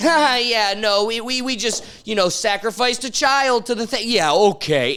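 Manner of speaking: loud, mock breezy throwaway tone with laughter. Acting out how people admit things in a laughing manner, imitating a laughing, joking tone. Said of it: "they'll say it in a laughing manner".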